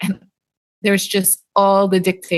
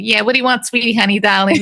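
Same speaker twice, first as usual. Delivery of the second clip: put-on sassy voice full of attitude; 2 semitones higher than usual. Retelling how diner waitresses talk: imitating a waitress with attitude. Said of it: "they got the same attitude".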